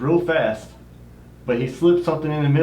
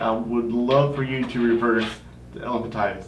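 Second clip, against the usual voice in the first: ordinary talk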